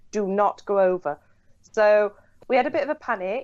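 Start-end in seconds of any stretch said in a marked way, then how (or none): 0.1-1.1 imitated stern, fatherly dad voice. Retelling a friend warning them not to approach: imitating a stern dad voice. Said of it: "turned into dad mode and leaned over us".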